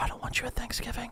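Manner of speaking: hushed, whispered mutter under the breath. Retelling what a drunk woman said at a gathering: imitating someone muttering under her breath. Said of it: "she says under her breath".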